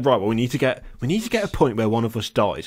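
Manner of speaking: ordinary talk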